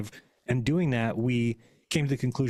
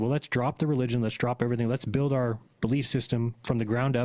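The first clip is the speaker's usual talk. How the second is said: ordinary talk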